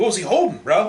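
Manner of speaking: frustrated tone.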